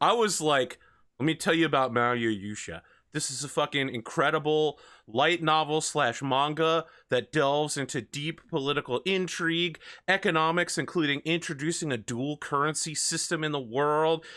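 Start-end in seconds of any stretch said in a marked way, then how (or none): none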